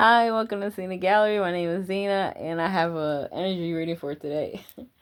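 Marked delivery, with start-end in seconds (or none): 0.0-1.4 giggling through the words, pitched up. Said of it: "I just started laughing".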